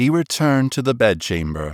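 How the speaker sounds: ordinary delivery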